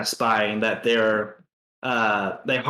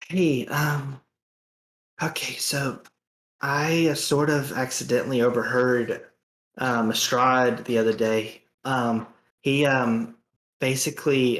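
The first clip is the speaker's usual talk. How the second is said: whispered, acted character voice. Voicing a character who shares overheard news: whispering in character. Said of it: "I was trying to whisper".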